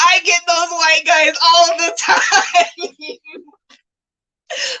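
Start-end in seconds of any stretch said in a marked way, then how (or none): 0.0-2.9 high, slow, amused laughing delivery. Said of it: "And I was like".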